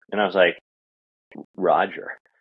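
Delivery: ordinary talk, nothing marked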